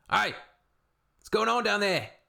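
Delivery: very high, clumsy, bad Australian accent. An australian trying to do an australian accent, in a bad australian accent. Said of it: "I can't do an Australian accent very good".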